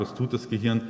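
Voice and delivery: normal talking voice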